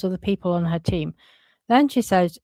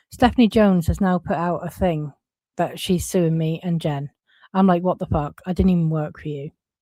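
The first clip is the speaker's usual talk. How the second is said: usual speaking voice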